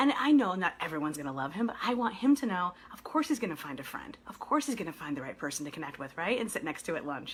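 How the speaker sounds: low, hushed, kept-quiet half-whisper. Parent talking about a child going to camp, so he won't hear, half-whispering. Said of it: "sorry, I'm whispering now".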